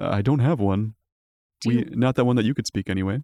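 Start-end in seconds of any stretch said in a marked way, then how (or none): 0.0-0.9 deep, low, hooting beast voice. The storyteller voices the creature maitre d', asked for its name: low, hooty creature voice. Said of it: "speaking in a low, hooty voice".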